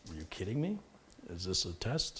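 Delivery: speaking in a dog character voice. Voicing the dog Lyle at the mention of dinner: voicing the dog Lyle. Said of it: "Lyle's like".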